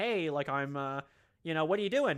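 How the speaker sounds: plain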